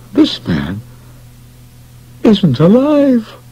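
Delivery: tight strained voice, very high, slow. A man looks up after finding no pulse, in a strained voice. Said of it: "he said in a strained voice".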